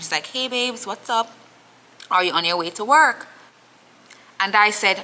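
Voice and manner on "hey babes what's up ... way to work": put-on half-whisper, higher. Retelling how his girlfriend answered the phone: imitating someone half-whispering. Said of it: "kinda whispering still".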